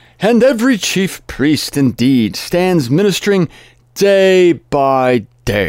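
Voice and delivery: speech with a Yiddish-inflected accent.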